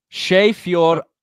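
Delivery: loud, attempted Irish accent. Reading out a hard Irish phrase: attempted Irish accent. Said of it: "I'm trying to do, like, an Irish accent".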